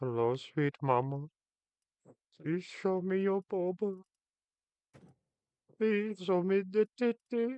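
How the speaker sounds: very high put-on Indian accent, male voice. After attempting a Turkish accent, the speaker slides into an Indian guy voice. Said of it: "I'll automatically flow to an Indian guy voice".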